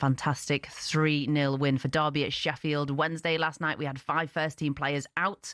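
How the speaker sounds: ordinary talk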